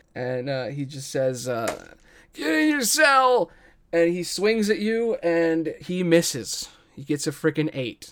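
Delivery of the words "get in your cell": very high, pained, strained yell. Voicing a character reeling from pain who yells as loud as he can: yelling through pain. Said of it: "he says as loud as he can".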